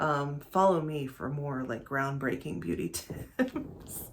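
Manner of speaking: slow, soft mock deadpan breaking into a laugh. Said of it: "I can't even deadpan the joke".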